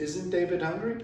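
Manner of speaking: ordinary talk, nothing marked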